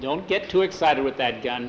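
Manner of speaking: ordinary delivery, nothing marked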